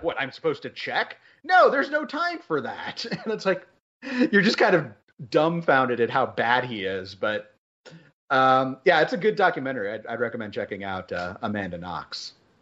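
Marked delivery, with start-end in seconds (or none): 0.0-3.0 high-pitched, incredulous disbelief. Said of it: "he incredulously is like".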